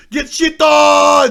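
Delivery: very loud, stretched-out, jeering, taunting yell. Retelling a match where Maniac kills Divios and yells at him: Maniac's taunting shout. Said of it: "He goes".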